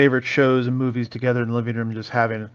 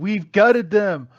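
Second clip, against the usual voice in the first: mock yelling, higher in pitch; 8 semitones higher than usual. Retelling quoting a movie speech in Sunday school: imitating own childhood yelling.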